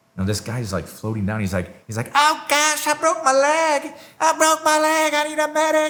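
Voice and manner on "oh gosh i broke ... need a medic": play-acted very high, drawn-out wailing scream. Retelling a guy floating down with a broken leg: imitating someone screaming. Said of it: "And he's screaming".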